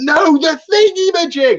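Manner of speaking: put-on shrill, very high, loud impatient shout. Retelling how the captain shouts for a tool: imitating Johnny shouting. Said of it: "It's like shouting at you".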